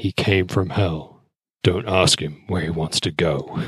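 deep movie-trailer voiceover narration voice. Pitching movie slogans on the podcast, the speaker does a deep movie-trailer voiceover voice. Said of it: "put on my deepest sexist voice, like the voiceover dude".

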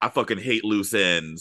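put-on, thick New York accent. Describing a film's police detective, super new york accent. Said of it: "the super New Yorkie".

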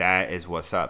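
plain

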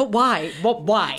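put-on livid, baffled, loud, drawn-out delivery. Retelling own reaction to a movie scene: retelling own livid reaction. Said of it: "I was so livid about that".

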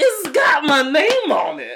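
very high, loud, animated, drawn-out sing-song drawl. Imitating Zach's reaction to a drink bearing his name: imitating Zach. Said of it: "That's a really good impression".

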